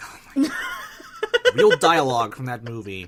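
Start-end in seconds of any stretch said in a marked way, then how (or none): 0.0-1.5 high, slow, incredulous laughing. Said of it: "I was like".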